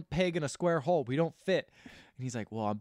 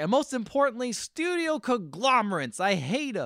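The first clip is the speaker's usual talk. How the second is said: high, ranting, cranky put-on old man voice hollering; 6 semitones higher than usual. Retelling a film character's speech: imitating someone yelling. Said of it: "He's really just yelling".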